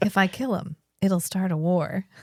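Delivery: muttering under breath. Retelling a character's line the other speaker says is muttered: imitating someone muttering under breath. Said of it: "He mutters un-, under his breath".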